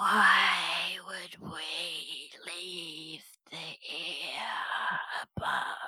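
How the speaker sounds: whispering voice. In a story, unseen voices answer a being ordering them to leave, whispering voice. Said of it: "you hear this kind of whispering sound".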